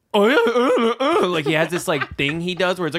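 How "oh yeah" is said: very high, loud, dopey idiot voice. Mocking an actor's usual delivery in every character: imitating a dumb voice. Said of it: "him just doing that same dumb voice".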